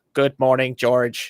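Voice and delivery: flat, toneless robotic voice. Show how a real person did her inflections, in a flat voice like the robot from the Jetsons. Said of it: "the way that she did the inflections".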